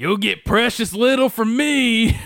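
shrill, very high voice. Quoting a favorite line from a game character: Arthur voice. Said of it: "So he's like".

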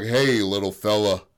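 very deep put-on voice. Retelling the strong man's words in a story: very deep voice. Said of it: "That was the deepest voice I've ever heard".

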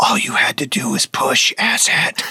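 hushed, cosmic-sounding whisper close to the ear. Narrating the scene, the speaker voices the universe whispering to Vanny. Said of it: "the universe whispering to you".

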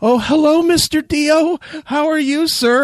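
shy, scared, timid, nervous, polite voice. Retelling how he answered the phone to the caller, acting shy and scared. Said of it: "I'm all shy and scared".

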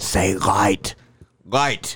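soft, hushed, under-the-breath whisper. Retelling how an uncle leaned in at an initiation: imitating a whisper. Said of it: "leans into me and whispers".

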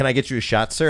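mock suddenly polite tone. Retelling how a bartender's tone changed on hearing where he's from: imitating bartender's suddenly polite tone. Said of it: "immediately his tone changes".

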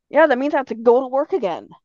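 ordinary talk

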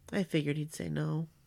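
play-acted, soft, very sad small voice. Retelling what a child said about the elf: imitating a sad little voice. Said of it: "the saddest little voice with the saddest little face".

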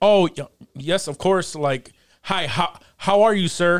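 proper, polite, code-switched put-on formal voice. Explaining code-switching at a job interview, demonstrate the code-switched job-interview voice. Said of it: "You code switch where it's just like".

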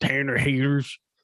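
put-on Southern accent.

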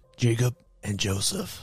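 spooky, eerie storyteller voice. Podcast host introducing the show and co-hosts, in a Batman voice. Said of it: "Why are y'all doing Batman voice?".

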